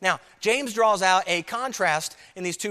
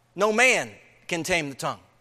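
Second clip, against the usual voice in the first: no and man each stressed hard, word by word; 4 semitones lower than usual. Reading verse 8 aloud from the text, emphasis on no man. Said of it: "I'll put the emphasis on that, those two words".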